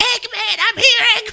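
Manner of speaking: put-on frightened cry, very high-pitched, terrified. Retelling a movie scene of a character calling for the eggman, imitating a terrified cry. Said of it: "the terror in her voice".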